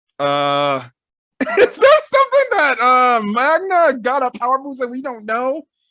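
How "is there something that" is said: high, loud laughing voice. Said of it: "he's laughing just as much as I'm laughing".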